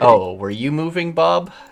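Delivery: put-on impatient tone. Telling others about being impatient sometimes: imitating own impatient self. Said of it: "I'm impatient".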